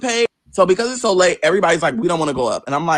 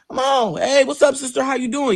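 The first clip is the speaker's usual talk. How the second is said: mock nonchalant, casual, laid-back, pitched up; 7 semitones higher than usual. Retelling how the sister casually greeted at the door: imitating sister's nonchalant greeting. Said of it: "opened the door real nonchalantly".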